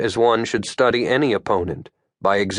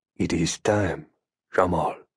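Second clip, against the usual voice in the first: gentle, reassuring, low and soft comforting tone; 5 semitones lower, 5 dB quieter than usual. Reading a story, the Qayyum answers nervous young Jamal by phone, low and comforting. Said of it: "in a low and comforting voice".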